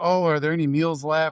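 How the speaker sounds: simple broken English. Retelling what a mother in a minivan full of kids asked, imitating broken English. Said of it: "kind of broken English".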